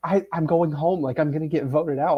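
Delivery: play-acted sobbing voice. Retelling what Rachel said when she came in fearing being voted out, imitating Rachel sobbing. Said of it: "Rachel is sobbing".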